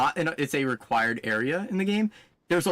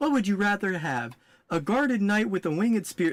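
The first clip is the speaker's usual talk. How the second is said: high, robotic, synthetic text-to-speech voice; 7 semitones higher than usual. Quoting his remark about Scholar, imitating an AI voice. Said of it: "That's how he sounds, by the way, because it's the A I voice".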